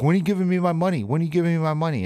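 mock yelling. Recounting daily calls to a manager about stolen items: retelling yelling at a manager. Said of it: "just yelling at this manager".

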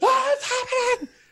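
very high, freaked-out, panicked scream. Recalling freaking out while watching the TV, retelling a panicked scream. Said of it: "screaming like a woman".

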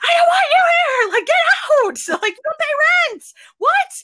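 put-on very high, shrill, fed-up screaming fit. Recalling being fed up with someone staying, retelling a scream. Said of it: "I was just like screaming".

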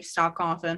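ordinary delivery

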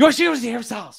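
high, nervous, flustered blurting.

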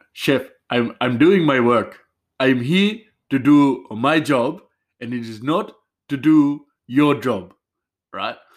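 loud put-on Indian accent. Retelling what a coworker said to his chef, in an indian accent. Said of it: "so I'll try and do an Indian accent".

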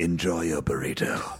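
very deep, low talking-car voice. Asking KITT for advice and voicing the answer, doing a KITT voice. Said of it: "Would you say it as Kit?".

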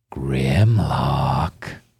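low, rough, creaky, drawn-out voice. Voicing a hidden voice calling from around the corner: unseen voice calling out. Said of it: "you hear a voice go".

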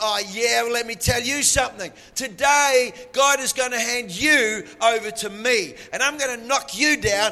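acted bold manner. Retelling David's reply to Goliath: David answering defiantly. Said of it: "looks Goliath straight back in the eye and says".

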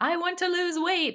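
high, loud mock proclaiming voice.

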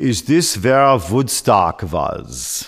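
put-on unhurried European accent. Retelling what visitors in rental cars usually ask, in a European accent. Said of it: "a voice in a European accent will say".

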